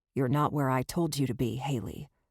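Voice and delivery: deep, low voice that sounds dangerous. Will finds Haley not where he told her to be; deep, dangerous voice. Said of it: "in a deep, dangerous voice".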